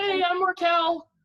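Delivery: very high cracking voice. Retelling introducing himself to the family while terrified, imitating a voice crack. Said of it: "voice cracked and everything".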